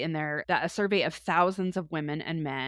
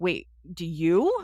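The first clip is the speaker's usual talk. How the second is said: put-on, loud, stunned, incredulous, baffled disbelief; 5 dB louder than usual. Retelling asking friends if they had one: imitating being baffled. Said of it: "I was so baffled by this".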